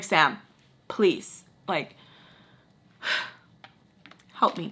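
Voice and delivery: hushed, breathy, begging whispered plea. Recounting begging Sam for help, retelling pleading. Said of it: "I'm pleading with her".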